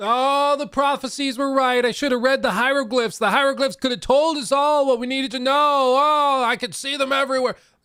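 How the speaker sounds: high, loud raving scream, man's scream. Retelling a drunk man in the street: imitating a man screaming. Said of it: "he's screaming about".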